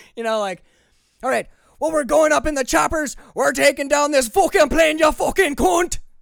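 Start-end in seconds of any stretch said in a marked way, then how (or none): 1.2-6.0 very loud American accent with Scottish breaking through. Showing how his Scottish comes through when excited: American accent, Scottish breaking through. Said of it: "the Scotch just kind of breaks through the American accent".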